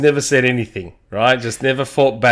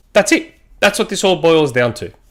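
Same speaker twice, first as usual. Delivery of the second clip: ordinary delivery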